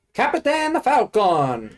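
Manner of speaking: put-on Italian-sounding announcer voice. Retelling what the Italian Smash Ultimate announcer says: imitating the Italian announcer. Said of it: "the most Italian-sounding man I've ever heard".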